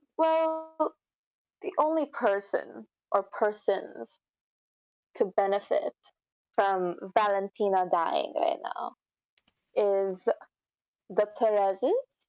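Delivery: snide, very snarky, sarcastic, pointed tone. Voicing a guest accusing the family of benefiting from a death: very snarky tone. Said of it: "kinda in a very snarky way".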